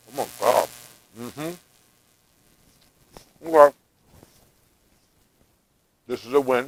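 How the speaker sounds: talking through a mouthful while chewing. Taking a bite of your warm custard treat: talking with mouth full. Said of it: "I'm talking with my mouth full".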